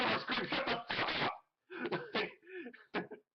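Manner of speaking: very slow yell, dragging every word. Retelling how one character scolds another: imitating Megatron yelling. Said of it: "Megatron is like".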